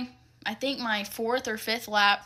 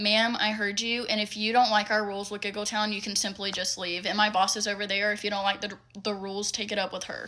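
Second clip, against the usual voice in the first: ordinary talk, nothing marked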